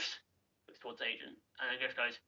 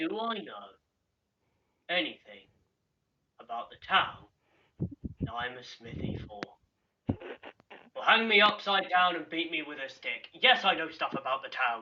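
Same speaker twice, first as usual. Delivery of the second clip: mocking, put-upon, sarcastic dwarf blacksmith voice; 3 semitones higher than usual. Voicing a dwarf smith asked about his own town: sarcastic dwarf smith. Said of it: "puts down his tools and he just goes".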